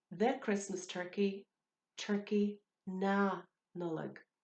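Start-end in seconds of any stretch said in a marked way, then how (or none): 2.0-4.2 "na" stressed harder than normal. Teaching a phrase for Christmas turkey: extra stress on na. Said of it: "I'm putting more emphasis on na than is normal".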